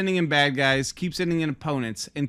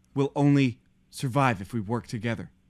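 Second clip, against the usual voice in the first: flat, low, dead-level monotone drone; 4 semitones lower than usual. Mocking a show's expository dialogue, in the Mandalorian's flat monotone. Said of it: "the most monotone".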